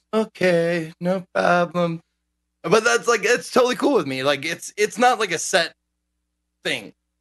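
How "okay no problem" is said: cute, agreeable, sugary little sweet-talking voice. Quoting one's own reply to a flexible plan, imitating a cutesy voice. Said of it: "like cutesy voice to each other".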